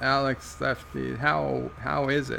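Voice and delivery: ordinary talk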